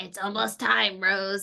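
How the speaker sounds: echoing, echoey demonic voice. Recalling a scene that scared them, quoting a character in an echoey demon voice. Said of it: "the echoey demon voice when she's like".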